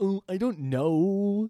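high, very slow, long-drawn "know". Imitating the other speaker brushing off book options: imitating Nick. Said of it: "I chose that impression specifically".

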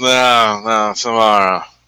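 exhausted, worn-out, barely bothering voice. Voicing a character collapsing onto a bed: really tired. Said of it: "really tired and just collapses onto bed".

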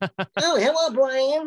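very high-pitched cartoon bird voice. A voice actor shows how he does Tweety: Tweety voice. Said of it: "I do Tweety like this".

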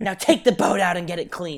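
put-on scolding mother voice. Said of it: "she turned into the mom from Mommy Dearest".

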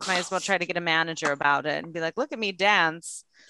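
put-on old-timey 1920s voice. Joking in conversation about the world having ended, in a 1920s old-timey voice. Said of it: "I've turned into like 1920s old timey voice".

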